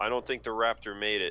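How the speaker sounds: normal talking voice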